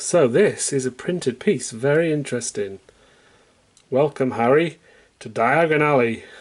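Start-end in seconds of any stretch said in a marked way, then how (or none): 3.9-6.2 mock Scottish accent, not very good. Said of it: "That's my Robbie Coltrane accent".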